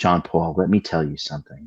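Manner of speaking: very low, soft, hushed, soothing voice. Retelling advice from a man who opened his own practice, imitating a soothing voice. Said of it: "his voice is like very soothing".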